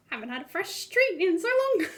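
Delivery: tiny, high-pitched little mouse voice. Answering an offer of treats for the morning, little mouse voice. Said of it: "I'm gonna get my little mouse voice".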